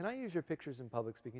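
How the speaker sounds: plain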